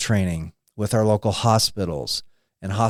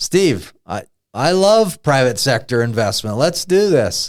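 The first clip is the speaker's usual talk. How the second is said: put-on tone with a sarcastic edge; 4 semitones higher, 4 dB louder than usual. Recalling what the governor said in a meeting, in a mock-sarcastic retelling. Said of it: "with the same sarcastic tone that I had".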